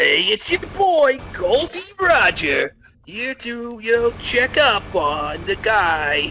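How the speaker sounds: put-on high New Jersey accent. Voicing Gol D. Roger introducing himself: Gol D. Roger with Jersey accent. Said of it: "I don't know why I have a Jersey accent".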